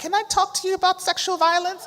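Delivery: high, loud, friendly voice.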